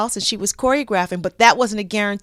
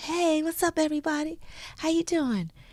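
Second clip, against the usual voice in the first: soft, low-key, easygoing, laid-back voice; 8 semitones higher, 8 dB quieter than usual. Retelling the moment Michael walks in and greets everyone, imitating Michael's low-key voice. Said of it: "And his low key voice".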